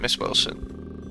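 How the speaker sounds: soft, slow, sympathetic whisper, breathed out.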